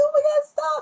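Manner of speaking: very high, loud, panicked, frantic cry.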